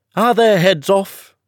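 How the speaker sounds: shrill, very high-pitched, loud shout. Narrator reads the Queen questioning her soldiers: shouted. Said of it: "shouted the Queen".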